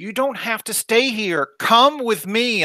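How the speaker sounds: high, all-out, full-force yelling. A player in a Star Wars game, speaking in character to a Twi'lek, shouting. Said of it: "I'm like shouting at this point".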